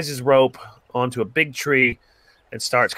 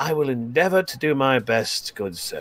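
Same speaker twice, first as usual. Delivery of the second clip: patronizing, condescending, laid on thick; 3 dB quieter than usual. Answering the gnome in character, as patronizingly as possible: patronizing. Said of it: "he says as patronizingly as possible to the gnome".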